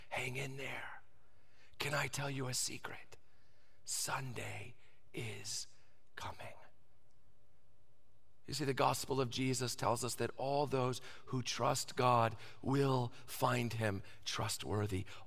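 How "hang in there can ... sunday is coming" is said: soft, low, tender whisper. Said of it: "Jesus looks down at us and whispers".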